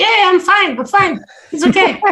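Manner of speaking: very high-pitched, reassuring little voice. Retelling how the man in the bear suit answered, in a high-pitched voice. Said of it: "the guy in the suit has a really like high pitched voice".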